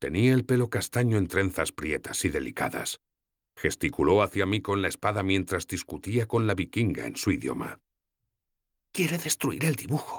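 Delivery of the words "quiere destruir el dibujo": high, hushed, servile half-whispered undertone. A narrator voices a character explaining an argument to the listener, half-whispering. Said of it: "susurró Sefawin".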